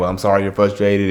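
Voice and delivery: ordinary talk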